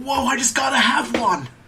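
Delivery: bad, very high, loud anime cartoon-hero shout. Joking that a dangerous creature sounds like a Pokemon: Ash Ketchum impression. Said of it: "This is my Ash Ketchum impression".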